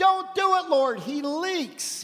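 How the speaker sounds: sharp, high, called-out cry. Retelling prayer time, when a lady shouted out; retelling a lady's shout. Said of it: "a lady shouted out".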